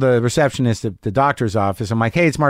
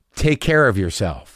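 put-on loaded tone, much lower and slower; 5 semitones lower than usual. Retelling what someone said as the speaker walked out: retelling a loaded 'take care'. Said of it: "Did you hear my tone just then?".

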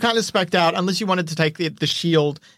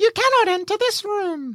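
squeaky, very high goblin voice. A goblin turns to the players as they strip bodies, goblin voice. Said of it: "the goblin turns to you and says".

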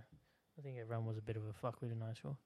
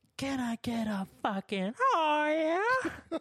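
shrieked shout, very high and very loud; 13 dB louder than usual. Retelling a school prank after the principal stopped talking: retelling screaming out. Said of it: "I just scream out and go".

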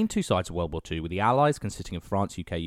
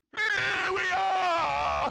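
shrill, creaky, raspy shout with drawn-out "are". Asked to say the line as the bull shrimp: shouting as the bull shrimp. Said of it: "Can you do it as the bull shrimp?".

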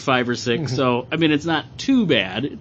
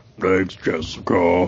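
fully transformed, brutish voice; 7 semitones lower than usual. Describing a character's thoughts, the speaker switches to her hulked-out voice. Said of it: "then it goes to her hulked out".

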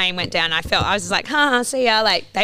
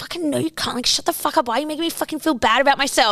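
mock arguing under breath, hushed, much higher pitch; 5 semitones higher than usual. Recounting an argument kept quiet so people wouldn't hear, retelling a muttered argument. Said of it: "kind of argument under my breath".

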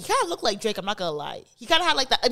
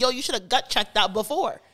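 normal talking voice

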